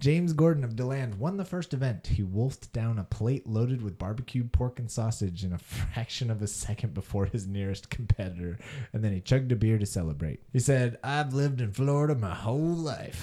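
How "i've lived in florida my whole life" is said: put-on Southern accent. Quoting the winner of an eating event's words, in a put-on accent. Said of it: "Nice accent".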